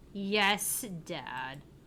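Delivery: grudging, forced delivery through clenched, gritted teeth. Sue answers her dad after he tells her to pay attention, through gritted teeth. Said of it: "I could swear she said that through gritted teeth".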